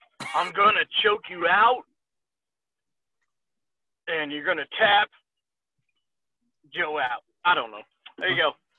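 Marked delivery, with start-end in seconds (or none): 0.3-7.2 slow, drawn-out wrestler voice. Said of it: "I'm trying to".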